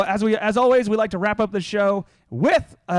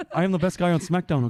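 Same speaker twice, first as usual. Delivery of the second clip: husky, put-on French Canadian accent; 3 semitones lower than usual. Boasting about being the best on SmackDown: Kevin Owens impression. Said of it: "I love doing Kevin Owens impressions".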